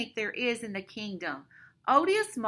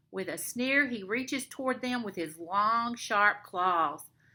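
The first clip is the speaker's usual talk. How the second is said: ordinary delivery, nothing marked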